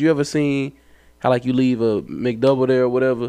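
ordinary delivery

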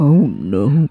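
very mellow, easygoing, super mellow deep voice. Showing a new catchphrase: super mellow deep voice. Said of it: "in just a super mellow, deep voice".

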